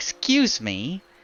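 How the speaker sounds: indignant, offended tone. Voicing a water spirit who glares at a player: glaring, indignant. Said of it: "looks over at you with a glare and goes".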